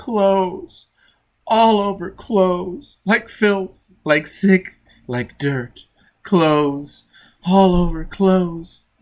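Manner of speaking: loud, high weeping through every word. Reading a crewman cowering in a shower corner, answering the man calling him, weeping. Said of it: "[name] wept. / "You were aboard [name]?" "Yes." / [name] wept. / [name] wept".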